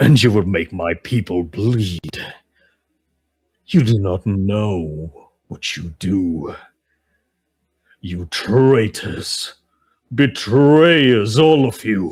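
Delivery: grand, declaiming delivery. A voice booms out across the battlefield at the attackers, a booming voice. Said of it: "you just hear a voice boom out".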